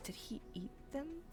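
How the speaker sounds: very quiet hushed voice. In a roleplaying game, a player's character asks a question in a lowered, hushed voice. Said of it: "And she like lowers her voice".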